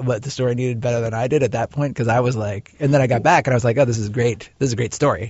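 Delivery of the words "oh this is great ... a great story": usual speaking voice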